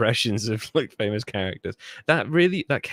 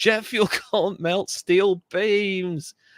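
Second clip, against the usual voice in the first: mock, very high, hollered, drawn-out yell; 9 semitones higher than usual. Recalling a guy who once did this, retelling his yell. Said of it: "and he yelled".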